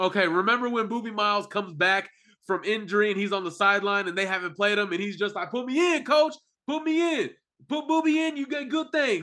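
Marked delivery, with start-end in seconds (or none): 5.5-9.2 put-on, insistent, very high yelling. Recalling a movie scene of a benched player, imitate Boobie Miles yelling. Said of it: "he just keeps yelling on the sideline".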